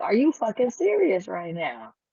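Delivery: play-acted derisive laughing through the words, swooping. Imagining women laughing at him: imitating someone laughing mockingly. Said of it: "they started laughing at him like".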